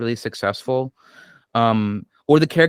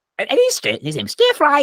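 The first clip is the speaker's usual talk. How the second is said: very high, bad, put-on English accent; 13 semitones higher, 3 dB louder than usual. A player introduces his little crow-man Kenku, Stir Fry's bad English accent. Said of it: "an American man with bad dictions take on the English accent".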